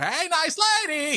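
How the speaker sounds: very high, very bad slapstick clown voice, cartoonish. Talking about French slapstick comedy, doing a very bad Jerry Lewis impression. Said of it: "doing my very bad Jerry Lewis".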